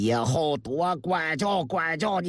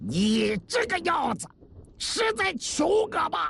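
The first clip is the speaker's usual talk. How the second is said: shrill, very high-pitched roaring bellow; 12 semitones higher than usual. A narrator reads one man roaring at another during a beating: roaring. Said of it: "吼道".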